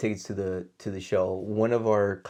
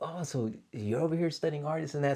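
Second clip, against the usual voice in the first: mock pumped-up, keen, excited, pitched-up tone; 6 semitones higher, 5 dB quieter than usual. Retelling a fan's wife asking about studying art: imitating someone all pumped up. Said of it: "all pumped up".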